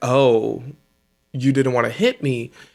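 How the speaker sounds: acted-out angry tone. Recapping a match, voicing a competitor who looks mad: mock-angry retelling. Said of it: "Cross is looking mad".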